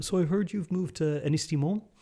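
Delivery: put-on posh Dublin 4 accent. Retelling what a person with a posh accent said: imitating a posh D4 accent. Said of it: "for D four accent again".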